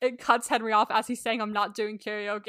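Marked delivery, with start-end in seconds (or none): none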